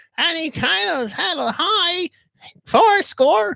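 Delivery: whiny voice, pitched high. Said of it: "He has a different voice than people".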